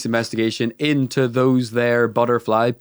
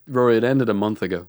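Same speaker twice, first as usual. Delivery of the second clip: usual speaking voice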